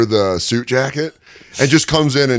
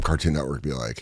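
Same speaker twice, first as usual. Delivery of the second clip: usual speaking voice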